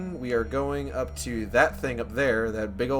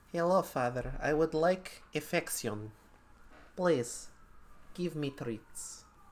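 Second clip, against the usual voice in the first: put-on pet cat voice; 3 semitones higher, 8 dB quieter than usual. Voicing the cat who disturbs the stream: speaking as the cat Raggy. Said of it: "He's just like".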